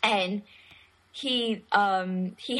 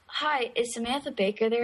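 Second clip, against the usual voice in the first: ordinary talk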